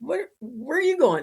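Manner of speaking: put-on, high-pitched, half-laughing, chuckling delivery. Retelling Hawaiian firefighters calling out to the running speaker; imitating a chuckling question. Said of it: "kind of chuckling".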